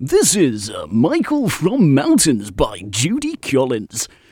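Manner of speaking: loud, swooping small-station radio dj voice. Introducing the next track, the host tries again in a local radio voice. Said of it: "Local radio voice".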